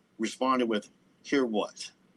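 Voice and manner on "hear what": put-on snotty tone. Retelling own reply to others' question: imitating own snotty reply. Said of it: "See how even then it's just so snotty?".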